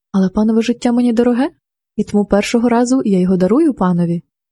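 ordinary delivery

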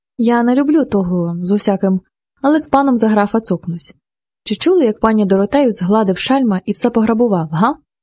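ordinary delivery

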